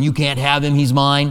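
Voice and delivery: ordinary talk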